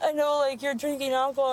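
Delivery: normal talking voice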